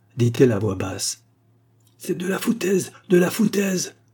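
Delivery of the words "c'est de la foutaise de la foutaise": bursting out, high and cried out. A lady cries out in response to another woman's quiet statement: exclaiming. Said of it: "s'écria Mademoiselle Lyle en rougissant".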